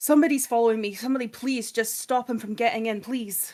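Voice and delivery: loud, frantic, panicked shouting. In a roleplaying game, a player's character runs into the nightclub, yelling. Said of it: "I'm yelling".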